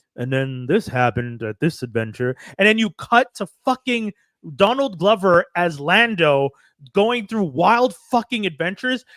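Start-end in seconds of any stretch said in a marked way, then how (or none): 0.2-2.4 smooth, easy, silky narration. Pitching a show idea, imitating intros as narrator: smooth Billy Dee Williams voice. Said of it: "smooth voice Billy D, being like".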